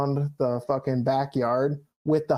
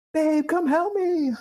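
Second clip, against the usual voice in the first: play-acted, very high, frantic, panicked yell; 14 semitones higher than usual. Retelling a motorbike fire, calling his wife for help: imitating his own yell for help. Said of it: "I'm yelling".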